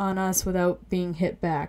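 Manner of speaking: plain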